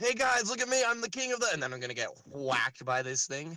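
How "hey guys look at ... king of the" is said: shouting in character, higher. Playing a character caught by a monster, calling to the group: yelling at the guys. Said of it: "I'm gonna be yelling at the guys".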